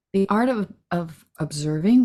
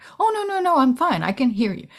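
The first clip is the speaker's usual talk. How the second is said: impatient, dismissive, pitched-up brush-off; 7 semitones higher, 3 dB louder than usual. Acting out a partner insisting they are fine: impatient tone. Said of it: "With still the impatient tone".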